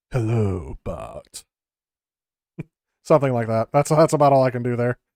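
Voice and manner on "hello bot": deepest possible, very low, dropped cartoonish voice. Asked whether they can do Sideshow Bob, trying a deep Sideshow Bob voice. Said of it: "to get that deep a voice".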